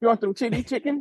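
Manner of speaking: very high-pitched put-on Chinese accent. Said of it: "Do a Chinese accent".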